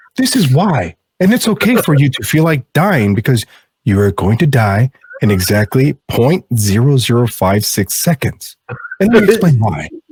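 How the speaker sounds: put-on soothing, calm explaining tone. Parodying a calm explainer, in a put-on soothing voice. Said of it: "That's very soothing".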